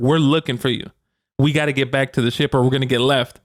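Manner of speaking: plain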